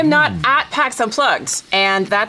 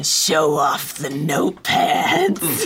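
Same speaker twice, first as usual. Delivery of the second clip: put-on eerie, unsettling, very creepy tone; 5 semitones lower than usual. Quoting someone's message about the items on the table, mock-creepy tone. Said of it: "in the creepiest tone".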